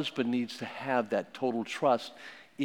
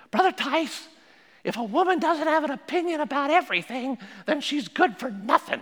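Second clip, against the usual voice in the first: put-on very high, squeaky little elderly woman's voice; 14 semitones higher, 6 dB louder than usual. Retelling what an eighty-six-year-old woman replied: imitating Mrs Rice's high squeaky voice. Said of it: "Missus Rice had a high squeaky voice".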